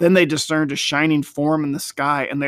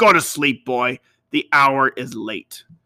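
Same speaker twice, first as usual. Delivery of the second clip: harsh, rough delivery, slower. Joel tells the boy David to go to sleep, roughly. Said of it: "Joel added roughly".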